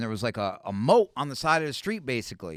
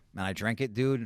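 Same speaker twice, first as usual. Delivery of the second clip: normal talking voice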